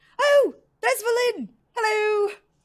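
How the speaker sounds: excited, pitched way up, slow, loud and drawn out. Voicing the professor greeting Valin from several feet away: excited Professor Scant voice. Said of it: "And he goes like".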